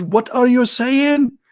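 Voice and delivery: put-on shrill drill-sergeant scream, very high, in-your-face. Retelling the sergeant yelling close to his face: imitating a sergeant screaming. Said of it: "they scream in your face".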